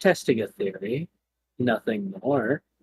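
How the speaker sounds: soft, eerie, sinister, creepy put-on feminine voice. Speaker answers a question from another speaker in a creepy voice. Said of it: "I was just trying to sound creepy".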